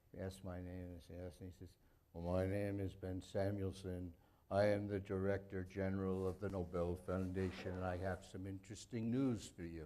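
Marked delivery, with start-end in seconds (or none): 2.1-9.8 put-on deep baritone, slower delivery. Retelling a phone call, the speaker does Ben Samuelson's deep baritone. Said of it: "there was this deep baritone voice".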